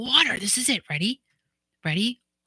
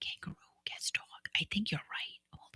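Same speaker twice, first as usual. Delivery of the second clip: hushed whisper under the breath, very quiet; 14 dB quieter than usual. Searching for a video while talking to another speaker: whispering. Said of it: "Why am I whispering?".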